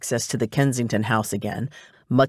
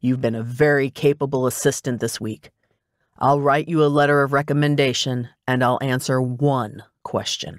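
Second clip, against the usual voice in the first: plain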